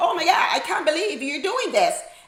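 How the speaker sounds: put-on high, eighties Valley Girl accent. Retelling how girls in the Valley talked: Valley Girl accent. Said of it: "this Valley Girl accent".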